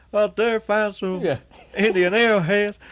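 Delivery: high, loud, blurted movie-character voice. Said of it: "how he sounded".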